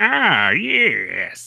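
put-on creepy old man voice, "yes" drawn out. Speaker describing a game's mission-giver character and imitating him: creepy old man voice. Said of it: "this like creepy old guy that's like".

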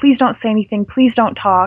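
put-on pleading tone, heartbreaking. Retelling a scene where Scott begs Allison: retelling a heartbreaking plea. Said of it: "his pleading here is really heartbreaking".

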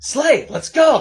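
very high, loud, shrill taunting yell in put-on voice. Voicing a player character who turns around: yelling in character. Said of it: "he just turns around and just yells".

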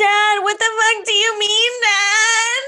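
put-on very high, loud girl voice, word stretched out. Mocking the show's daughter actor with an impression of her. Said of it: "this is my impression of her".

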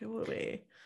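embarrassed, soft, unvoiced, barely audible whisper.

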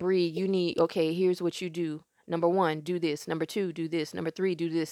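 usual speaking voice

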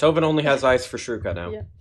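plain

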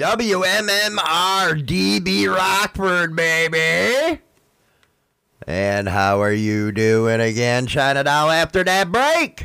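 shouting. Greeting the co-host after the break, yelling in her ear: yelling. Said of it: "Stop yelling in my ear".

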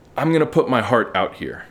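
ordinary talk

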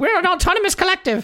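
very high-pitched comedy woman voice. Quoting a scene from Holy Grail: Monty Python woman voice. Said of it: "it's the Monty Python woman in, uh, is it, is it Holy Grail, where she's like".

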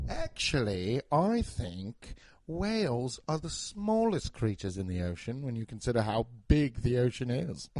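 put-on relaxed, low British accent. Showing how a british person would say something, in a british accent. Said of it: "he's got a cool accent".

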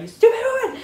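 high, loud mock angry shout with laughter.

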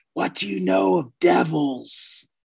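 big, theatrical stage whisper. Playing a character questioning the lawkeeper, in a big stage whisper. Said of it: "in a big stage whisper".

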